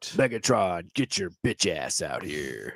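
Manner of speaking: very low, slow, angry, challenging tone. Doing a Transformers bit: angry Optimus Prime voice. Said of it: "my version of Optimus Prime has a lot more, like, anger".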